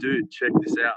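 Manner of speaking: ordinary talk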